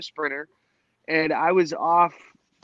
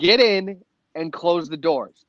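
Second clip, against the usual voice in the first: ordinary talk, nothing marked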